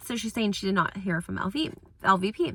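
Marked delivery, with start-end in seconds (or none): none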